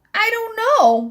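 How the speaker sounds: tiny, very high, squeaky little voice. Narrator reading a little fellow's reply to Miss Sparrow, squeaky voice. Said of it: "he squeaked".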